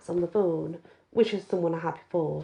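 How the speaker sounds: plain reading voice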